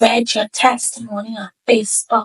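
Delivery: secretive stage whisper. Retelling a woman who approached about her Facebook testimony, imitating a half-whisper. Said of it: "she whispered, she was like".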